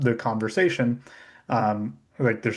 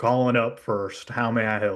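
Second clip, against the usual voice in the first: put-on drawling Southern accent. Coworkers demo a voice option from their testing account: Clint from Texas voice. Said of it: "We use the the Clint from Texas".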